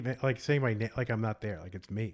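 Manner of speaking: usual speaking voice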